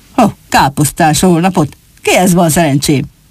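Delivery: ordinary delivery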